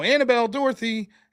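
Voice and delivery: high, carrying call-out yell. Retelling calling names at the door, retelling own yell. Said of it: "I go to the door and I yell".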